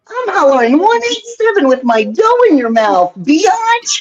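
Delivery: very high, cartoonish mascot voice. Retelling a line performed for a room of comedians: Pillsbury Doughboy voice. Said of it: "something different to say as Pillsbury Doughboy".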